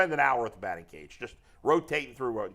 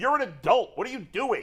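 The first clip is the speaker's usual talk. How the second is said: imitated yelling, raised pitch; 8 semitones higher than usual. Retelling a fight at the batting cage: retelling yelling at a man. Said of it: "just yelling at the guy".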